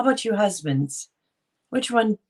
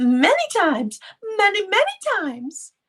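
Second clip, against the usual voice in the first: put-on high-pitched Southern accent, pitched way up; 13 semitones higher, 3 dB louder than usual. Quoting Blanche's answer when asked about the pleasure: Blanche's southern accent. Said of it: "you know how she talked all southern".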